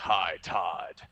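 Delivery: very deep, low voice dropped way down. Speaker retells meeting him for a photo, and his greeting: Batman voice. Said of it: "he goes in that oh so perfect Batman voice".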